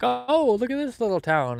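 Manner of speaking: very high-pitched, mock-amazed gushing voice. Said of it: "that you're like".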